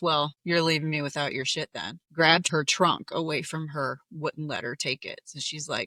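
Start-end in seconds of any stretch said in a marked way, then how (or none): none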